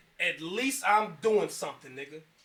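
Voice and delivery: ordinary talk, nothing marked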